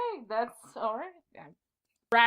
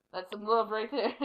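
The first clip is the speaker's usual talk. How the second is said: usual speaking voice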